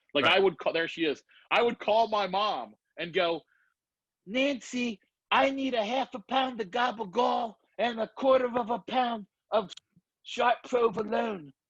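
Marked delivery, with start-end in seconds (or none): 4.2-11.4 high, slow grandmother voice, closely imitated. Speaker showing a spot-on impression, calling their mom Nancy: impression of the speaker's grandmother. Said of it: "I can do my grandmother spot on".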